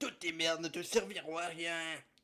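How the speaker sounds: throat-straining put-on character voice. Reading a chapter aloud, voicing a character's line: Monsieur Lorraine voice. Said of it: "faire la voix de Monsieur Lorraine".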